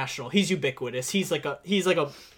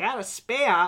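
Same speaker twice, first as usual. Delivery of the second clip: bad, weak cartoon voice, slow and drawn out; 4 semitones higher than usual. Retelling a movie scene to another speaker: bad Bugs Bunny impression. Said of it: "these are my worst impressions".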